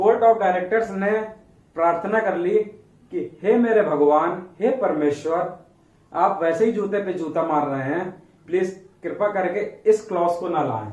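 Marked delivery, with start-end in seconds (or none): none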